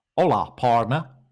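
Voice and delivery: put-on western cowboy accent. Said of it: "I gave him more of a Western accent".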